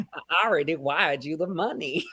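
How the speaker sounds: put-on Southern-sounding voice. Trying the line again for Snatch Game: Anna Delvey impression sounding Southern. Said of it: "I sound like Nathan Lane in The Gilded Age".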